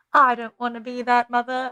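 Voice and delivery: attempted Scottish accent that lands as British. Retelling Merida's answer to her prim and proper mother: Merida in a British-sounding accent. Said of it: "my British accent, it's not Scottish".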